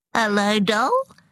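bright, high, chirping tone. Narrator reads Suze greeting Delore on her way home, high, chirrupy voice. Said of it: "Suze's voice was high and chirrupy".

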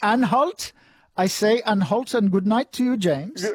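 clumsy put-on German accent. Saying good night to James after the quiz: put-on German accent. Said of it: "I shouldn't be doing German accents".

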